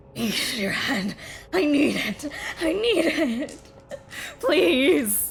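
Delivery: strained, breathy, desperate pleading.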